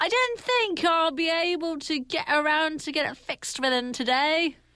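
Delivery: put-on stage Cockney accent, pitched high.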